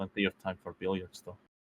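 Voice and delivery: very quiet, low mutter under the breath. Voicing Nicholas, who comments to himself: muttering under his breath. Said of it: "mutter under his breath".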